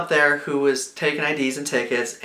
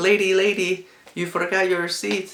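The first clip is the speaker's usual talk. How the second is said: horrible, put-on French accent, pitched up; 5 semitones higher than usual. Retelling what a French lady called out to her: horrible French accent. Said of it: "That's a horrible accent".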